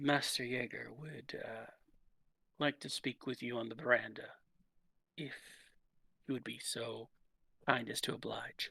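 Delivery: very soft, discreet whisper. Voicing a server who bends over to pass on a message: whispering. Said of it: "bends over and whispers in your ears".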